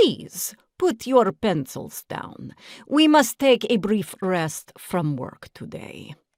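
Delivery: put-on strange, odd Transylvanian accent. A teacher clears her throat and addresses her pupils in Mrs. Jeepers' strange Transylvanian accent. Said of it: "talking in her strange Transylvanian accent".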